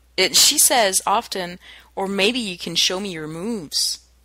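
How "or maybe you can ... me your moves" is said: normal talking voice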